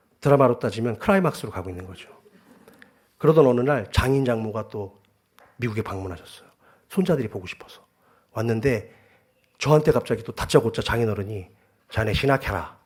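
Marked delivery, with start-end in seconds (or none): 11.9-12.7 put-on Daegu Gyeongsang accent, much lower. Retelling his father-in-law's sudden words to him, in Daegu dialect. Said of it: "대구 사투리로".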